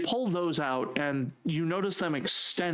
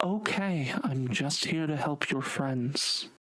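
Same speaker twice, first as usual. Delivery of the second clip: calm, gentle, reassuring feminine voice. In a game scene, a character holds up a hand while approaching: soft feminine voice. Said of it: "in a soft feminine voice and go".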